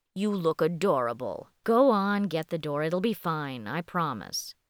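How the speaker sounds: ordinary delivery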